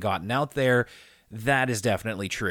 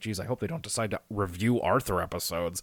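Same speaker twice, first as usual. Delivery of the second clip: put-on mutter under breath, lower and quieter; 4 semitones lower, 4 dB quieter than usual. Retelling a past reaction to an announcement: imitating muttering under breath. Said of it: "under my breath, I was like".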